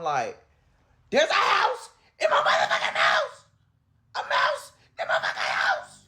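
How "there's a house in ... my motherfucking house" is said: very high, frantic, shrieking panicked scream. Retelling seeing a mouse hop across the living room, retelling screaming in panic. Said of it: "And I'm screaming".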